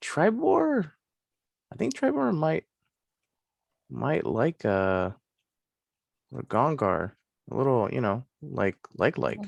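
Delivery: quiet whispering. Playing a character who whispers to himself about another character: whispering to himself. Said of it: "I'll whisper to myself".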